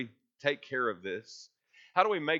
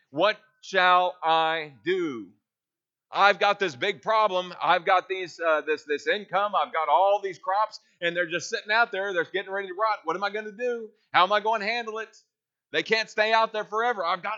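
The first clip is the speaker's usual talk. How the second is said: raised, anxious, angst-filled fretting voice; 7 semitones higher, 7 dB louder than usual. Preacher voicing the worried rich man of verse 17, mock-anxious angst. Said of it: "you hear the angst in his voice".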